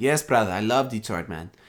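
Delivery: put-on Greek accent. Retelling a phone call with a player who says yes: Giannis Greek accent. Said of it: "And in his Greek accent".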